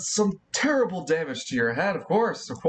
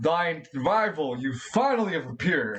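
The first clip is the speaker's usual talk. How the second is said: hulking giant voice, grand and theatrical. Voicing Gregor, a giant rival who finally appears: loud booming voice. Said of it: "A loud, booming voice appears".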